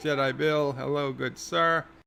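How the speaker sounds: ordinary talk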